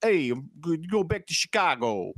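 rough, attempted New York accent. Describing a movie's characters to co-hosts, attempted New York accent. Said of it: "I don't know if I could do a New York".

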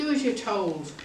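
ordinary talk

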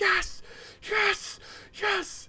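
high-pitched, strained whispered yell. Retelling jumping with a pillow during a fight: retelling a whisper-yell. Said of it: "whisper yelling".

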